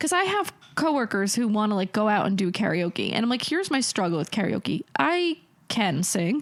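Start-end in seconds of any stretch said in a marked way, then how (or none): none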